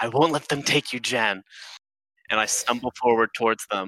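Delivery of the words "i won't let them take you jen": put-on drunk, hushed whisper. In a game scene, a player speaks as Fisk to another character, drunken whisper. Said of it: "Fisk whispers to Jan".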